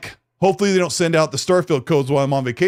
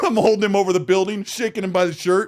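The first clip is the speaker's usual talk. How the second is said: plain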